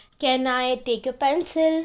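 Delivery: plain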